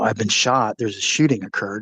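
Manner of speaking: usual speaking voice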